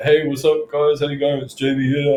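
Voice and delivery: put-on strong, odd-sounding New Zealand accent. Retelling own first cold sales calls on the phone: imitating own weird New Zealand accent. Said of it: "some kid from New Zealand with a weird accent".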